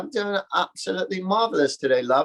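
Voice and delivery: affected, put-on British accent with a lilt. Speaker retelling his answer to a restaurant waitress, in a put-on accent. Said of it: "oh my God, I love your accent".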